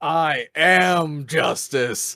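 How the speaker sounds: defiant, loud yell. Player character defiantly yelling at a monster: defiant yell. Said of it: "as Norman defiantly yells".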